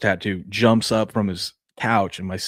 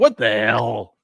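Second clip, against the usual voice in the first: put-on voice of a three-year-old child; 2 semitones higher than usual. Imitating a three-year-old reacting to a busted window: imitating a three-year-old. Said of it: "That's my three-year-old".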